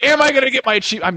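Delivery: mock shrill, very high, fed-up, mad yelling. Speaker re-enacts himself yelling about his Xbox achievements, retelling his own yell. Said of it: "I'm yelling about my fucking deadliest catch achievements".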